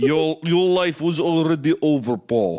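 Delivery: put-on Russian accent, full of mystery. Retelling what a bullet capsule said in a video, in a mysterious russian accent. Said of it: "in a mysterious Russian accent".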